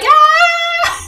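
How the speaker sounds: very high, long, drawn-out giggling ah. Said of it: "pummeling your fists against it while you're laughing".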